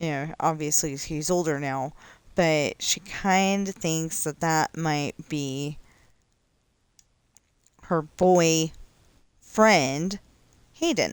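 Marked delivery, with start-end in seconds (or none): 8.0-10.2 put-on loud, "boyfriend" split with pause between boy and friend. Saying boy friend on purpose, with a pause between boy and friend. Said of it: "I paused on purpose".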